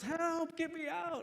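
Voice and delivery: very high, shrill, loud screaming yell. Retelling a story of a gorilla falling into a lion's pit; retelling a scream for help. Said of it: "he's like screaming and yelling".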